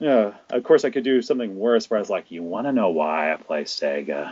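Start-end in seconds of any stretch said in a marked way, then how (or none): 2.3-4.3 low, hushed creepy voice. Joking about promoting My Life with Sega, doing a creepy Joker voice. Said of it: "the creepy voice".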